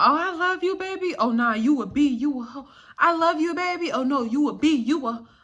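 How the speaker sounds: mock drunken rambling. Retelling his words while he was drunk, going in and out: imitating drunken rambling. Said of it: "he's so drunk".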